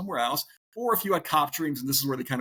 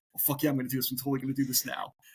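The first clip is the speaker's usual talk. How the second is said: put-on excited tone. Retelling own reaction to a friend's daily academy stories: retelling own excitement. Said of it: "I'm getting all, like, excited".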